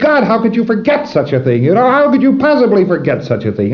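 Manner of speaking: very high-pitched, raving, ranting outburst. Retelling a prosecutor reacting to a forgetful witness in court, imitating a raving prosecutor. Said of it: "And he's raving".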